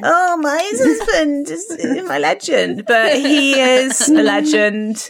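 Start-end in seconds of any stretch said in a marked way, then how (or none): 0.1-2.9 high, teasing, mocking put-on parody voice. Retelling how another speaker mocked her words: imitating someone mocking her. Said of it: "how much you mock me".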